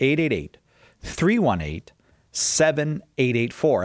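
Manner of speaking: deliberately slow, clearly enunciated. Host giving listeners a number they can call, saying it slow and clear. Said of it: "I'm saying that slowly and clearly".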